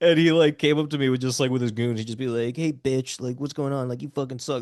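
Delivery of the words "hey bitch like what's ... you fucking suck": cliché tough-guy movie-bully taunting voice. Retelling how a kid who bullied the speaker used to taunt them, imitating a stereotypical movie bully. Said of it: "very stereotypical like movie bully stuff".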